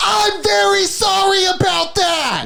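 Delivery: mock very high, very slow, drawn-out hollering. Retelling a movie character's sad line, imitating a character yelling. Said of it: "Why are you yelling?".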